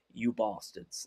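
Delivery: breathy, whispered put-on British accent. Repeating the phrase a british friend laughs at. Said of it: "decent impression".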